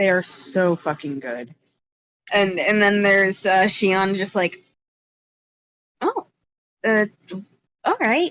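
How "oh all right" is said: high-pitched, swooping, sing-song put-on voice. Voicing the character Shion in a scene, high Shion voice. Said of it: "I'm keep trying to give him a high voice".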